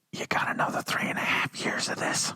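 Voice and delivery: hushed, confidential whispered aside. Breaking unwelcome news to protesters as a joke: whispering. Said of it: "I'm gonna whisper it".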